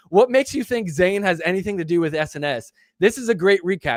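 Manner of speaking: ordinary talk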